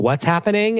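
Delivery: acted, high-pitched, dazed, stunned bewilderment. Imagining a new girlfriend trotted out on the call: imitating dazed confusion. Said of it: "deer in headlights being like".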